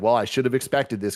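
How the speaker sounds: plain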